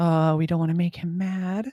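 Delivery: put-on small, high young girl's voice. A game master voices the original little girl in the scene; little girl's voice. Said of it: "it's the original little girl's voice".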